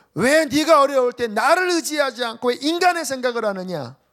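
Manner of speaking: loud, rebuking shout. Retelling a prophecy spoken to the speaker's older sister: imitating a shouted prophecy. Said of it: "말씀을 막 외치신 거예요".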